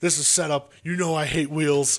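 put-on screaming. Retelling a wrestler's angry reaction backstage: imitating someone screaming. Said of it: "he's screaming".

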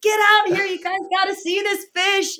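very high-pitched, excited shouting. Retelling calling roommates outside to see a fish: imitating own yelling. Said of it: "I'm yelling at my roommates".

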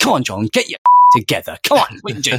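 animated, swooping, self-scolding shout. Retelling a reprimand shouted at oneself while skiing down a mountain: imitating own past shouting. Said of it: "You're shouting at yours-, at yourself".

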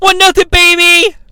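loud, high-pitched squeal. Recapping a match where referee Slick Johnson confirms the score, Slick Johnson's high-pitched squeal. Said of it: "in a high-pitched voice, squeals".

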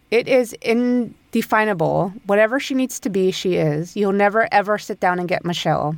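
usual speaking voice

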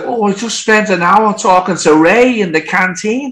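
put-on Liverpool Scouse accent. Retelling a conversation with the bass player during a vocal session, scouse accent. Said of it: "That's my Scouse accent".

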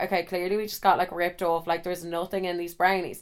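normal talking voice

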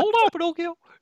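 very high, loud voice. Reviewing a movie, imitating the cricket character: Jiminy Cricket voice. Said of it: "You sound great".

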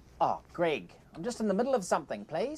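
put-on New Zealand accent. Answering Greg, who has just called his name: Murray New Zealand accent. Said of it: "think of Murray from Flight of the Conchords".

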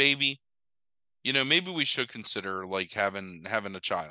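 ordinary delivery

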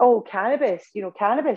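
high, open, blurted-out exclamation. Retelling a receptionist's reply, imitating a loud exclamation. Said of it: "is at the top of her voice".

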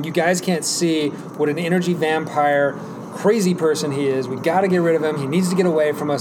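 plain

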